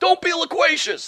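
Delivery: high, slow mock bossy voice.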